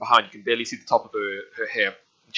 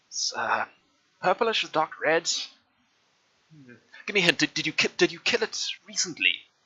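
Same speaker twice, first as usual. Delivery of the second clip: put-on tiny old woman voice, much higher, quieter; 6 semitones higher, 3 dB quieter than usual. Storyteller voices a tiny old woman examining what's in her hand: tiny old woman voice. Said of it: "and you see this tiny old woman with this huge amount of grey hair, / and you see this tiny old woman with this huge amount of grey hair, just like falling around her body. It doesn't reach the floor".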